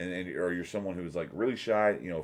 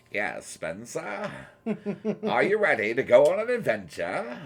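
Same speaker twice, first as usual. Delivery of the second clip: slow, high, drawn-out ancient warlock voice; 8 semitones higher, 5 dB louder than usual. Showing the voice of a male Baba Yaga character: male Baba Yaga voice. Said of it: "that was his voice".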